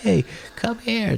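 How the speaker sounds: very high-pitched, thrilled, excited yell. Retelling calling someone over when excited: imitating own excited yell. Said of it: "I'll yell, like, I do yell like that".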